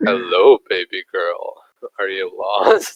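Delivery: very low, creepy, suggestive come-on voice. Recalling how they greeted any girl entering the room: mock-creepy greeting. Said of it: "in a fucking creepy way".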